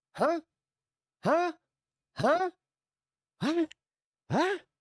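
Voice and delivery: acted, very high, bewildered repeated huh. Retelling how someone slowly caught on: imitating a confused "huh". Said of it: "that took him a minute where he's just like".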